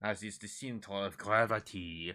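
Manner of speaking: slipping into a French-sounding accent. Explaining a rocket design, saying a line in a French-sounding accent. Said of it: "Talking like I'm fucking French".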